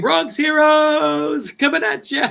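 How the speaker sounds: high, very slow, stretched-out screaming call. Recalling having to shout to people across a huge place, retelling own screaming. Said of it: "like screaming".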